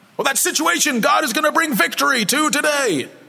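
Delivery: worst attempt at an American accent. Speaking about the Jericho passage, putting on his worst American accent. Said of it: "It's my worst American accent".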